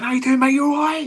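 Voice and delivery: high, shouted, fake-friendly matey tone. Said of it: "I used to pretend I knew everybody".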